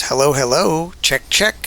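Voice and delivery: put-on parrot voice. Recording a test take while editing audio, in a parrot voice. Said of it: "this is me doing the parrot voice".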